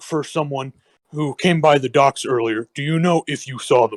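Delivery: ordinary delivery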